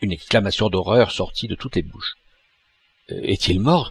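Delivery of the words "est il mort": out of breath, panting, gasping. The president asks about a man stabbed in the street, panting. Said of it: "haleta le président".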